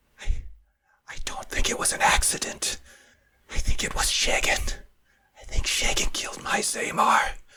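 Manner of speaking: confiding, hushed, secretive whisper, barely voiced. Narrator voicing a woman character who whispers to the listener: whispering. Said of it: "she sort of whispers to you".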